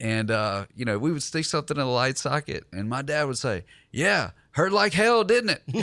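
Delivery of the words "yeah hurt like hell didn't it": put-on Southern comedian voice, higher and louder. Retelling a comedian's bit from an old tape: Jeff Foxworthy impression. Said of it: "That's my best Jeff Foxworthy".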